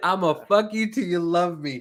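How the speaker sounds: usual speaking voice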